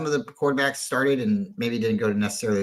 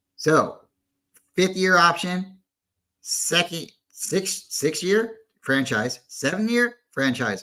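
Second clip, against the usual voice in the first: ordinary delivery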